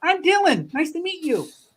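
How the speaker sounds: put-on high-pitched kid-like voice. A young kid, Dylan, introduces himself to the group, in a young Kermit voice. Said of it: "does he sound like a young Kermit?".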